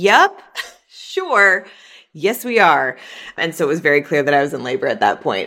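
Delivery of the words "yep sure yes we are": super sarcastic, slow, sing-song delivery. Retelling an answer given while in labor, acting out being super sarcastic. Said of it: "Super sarcastic".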